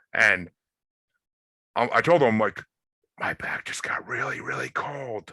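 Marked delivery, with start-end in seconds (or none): 3.2-5.4 soft, hushed whisper under the breath. Retelling a moment in a dark bedroom with a spirit box running: imitating own whisper. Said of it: "I'm trying to whisper".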